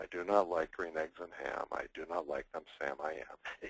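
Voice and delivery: flat, hushed, very low monotone reading. Showing how not to read a children's book aloud: flat reading, no voices. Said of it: "You don't open up the book and say".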